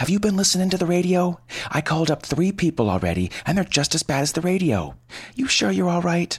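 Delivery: frantic, hysterical panic, voice very high-pitched. Narrator reading Doris on the phone with Lenny, sounding hysterical. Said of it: "She sounded absolutely hysterical".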